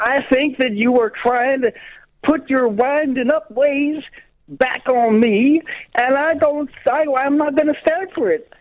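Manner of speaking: fake upset stammering. Playing an American dared to get wound up: acting very upset. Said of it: "it sounds like you're getting very upset".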